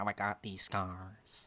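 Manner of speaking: low, hushed, soft, unhinged villain voice. Given the floor to do voices, the speaker starts: Heath Ledger Joker impression. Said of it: "I'll do Heath Ledger first".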